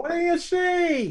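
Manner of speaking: shouting. Asking a companion what they see: shouting. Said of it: "you don't have to shout".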